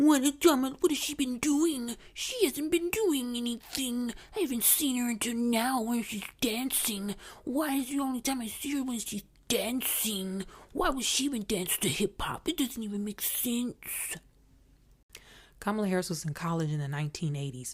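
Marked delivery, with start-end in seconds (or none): 0.0-13.8 derisive, mocking, high put-on man's voice. Quoting people who ask what she has been doing, in a mocking male voice. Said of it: "in the mocking male voice".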